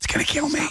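hushed whisper under the breath. Acting out a librarian complaining about the job: imitating a librarian whispering. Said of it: "they say it in a whisper".

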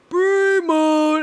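mock wrestler-style shout. Mocking how Brie Bella yells her catchphrase: imitating Brie Bella yelling. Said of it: "When she yells".

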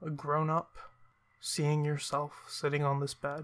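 ordinary delivery

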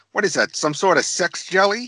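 animated sitcom cartoon dad character voice. Recalling what comes to mind at Y two K: Peter Griffin voice. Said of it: "Peter Griffith's voice saying".

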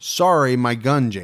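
put-on snide sarcastic tone. Retelling what Byron said after the rifle jammed, mimicking Byron's sarcastic tone. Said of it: "in a real kind of shitty sarcastic tone".

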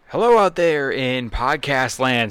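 booming, loud, drawn-out showman voice. Opening the episode by greeting the listeners: loud greeting. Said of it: "that was loud".

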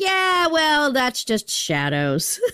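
high, slow, condescending explaining tone.

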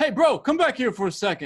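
shouting, calling out, pitched very high. Retelling walking past an alley, imitating a guy calling out. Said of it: "I hear this guy calling out to me".

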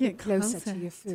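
seductive, sultry, sexy voice. Trying out a food tagline, in a sexy voice. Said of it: "In a really sexy voice? Like".

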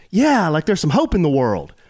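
ordinary talk

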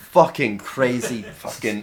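muttering, grumbling under breath. Voicing a character going back inside: muttering to himself. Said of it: "he mutters to himself as he goes".

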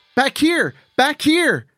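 shrieked, very high, swooping scream. As a creature punches through the glass, a girl calls the others back; screaming. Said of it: "Jade screamed".

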